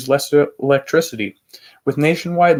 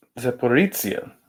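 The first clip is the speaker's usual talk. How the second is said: put-on Italian-style pronunciation, quieter; 4 dB quieter than usual. Reading news aloud, repeating a place name with Italian-sounding pronunciation. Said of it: "I'm pronouncing it like an Italian now".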